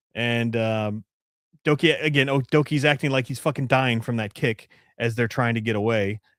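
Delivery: plain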